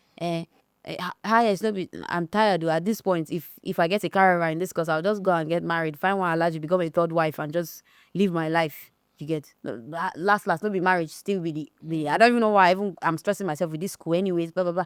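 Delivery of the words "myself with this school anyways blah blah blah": ordinary talk, nothing marked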